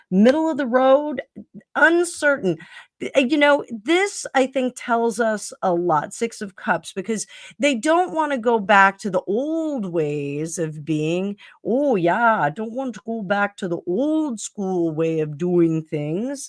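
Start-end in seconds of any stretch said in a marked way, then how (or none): 11.6-16.5 very poor put-on Canadian accent. Voicing the Six of Cups' view, in the speaker's worst Canadian accent. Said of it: "that was my worst Canadian accent ever".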